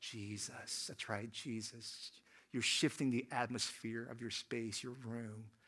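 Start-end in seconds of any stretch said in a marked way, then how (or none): 0.0-2.1 breathy hushed whisper, barely voiced. Leading everyone to say the name together on three: whisper. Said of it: "in the voice of a whisper".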